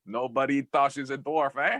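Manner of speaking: put-on Québécois French Canadian accent. Asked to show a French Canadian accent: French Canadian accent. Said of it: "want to hear your French Canadian".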